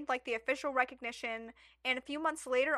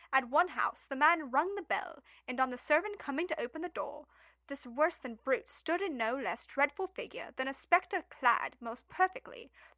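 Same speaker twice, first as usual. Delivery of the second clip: put-on British accent. Reading aloud an old complaint letter from a Peckham resident: put-on British accent. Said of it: "Can I do, like, British?".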